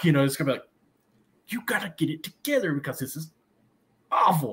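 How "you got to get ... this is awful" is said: yelling in a whisper, scolding. Showing how a coach scolds players at a quiet game: whisper-yelling. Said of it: "yell in a whisper form".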